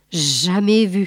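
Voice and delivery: murmuring under the breath. Lambert, shown a photograph by the lieutenant, murmuring. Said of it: "murmura celui-ci".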